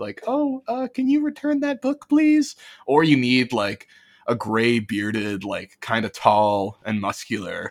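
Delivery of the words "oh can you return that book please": very high, timid, docile, meek little voice. Describing two kinds of librarians, imitating a docile, meek librarian. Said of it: "the very docile and meek".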